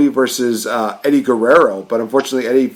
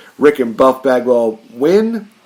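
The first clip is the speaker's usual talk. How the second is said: plain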